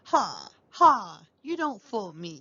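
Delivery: curt, snappish, scoffing, snorting tone. Reading a story, Scrooge scoffs at the ghost: snapping, snorting Scrooge. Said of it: "the miserable [name] replied. / the miserable [name] replied. / snorted [name]. / old man. / snapped [name]".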